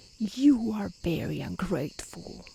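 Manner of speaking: slow, dreadful, frightening monster voice, terrible beast tone. Narrating a fairy tale, voicing the beast confronting the merchant: terrible voice. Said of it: "said the beast to him in a terrible voice".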